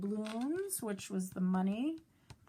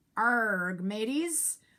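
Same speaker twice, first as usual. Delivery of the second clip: put-on pirate voice, louder; 2 semitones higher, 6 dB louder than usual. Ending a talk to boys and girls, showing them pirate talk: talking like a pirate. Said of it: "maybe even talk like a pirate".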